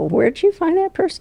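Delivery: mock voice lifted way up, very high-pitched. Retelling how an assistant reacts to a bad hire: imitating Julie's raised voice. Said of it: "she'll kind of raise her voice and go".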